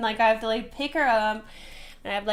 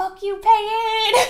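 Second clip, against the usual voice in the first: mock high, loud, slurred-drunk and furious voice; 12 semitones higher, 6 dB louder than usual. Retelling how a drunk woman lashed out at the speaker in a car, mock drunk, super mad. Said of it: "she's so smashed that she gets like super mad at me".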